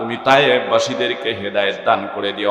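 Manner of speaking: ordinary talk, nothing marked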